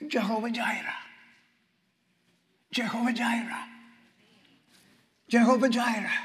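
very soft, gentle, hushed, close to the ear. Retelling how a woman leaned to the speaker's ear while ministering: very soft voice. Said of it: "leaned over to my ear and very softly".

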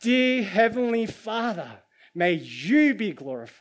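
very loud, high-pitched proclaiming yell. Telling the passage's story, acting out a Pharisee from a high place, imitating a loud yell. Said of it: "he yells out".

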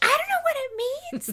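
baffled, high-pitched, loud wail.

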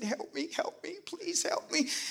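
put-on very soft, tiny, hushed, pleading little-boy voice. Retelling the trapped little boy inside calling out: imitating a little boy's voice. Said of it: "that little voice".

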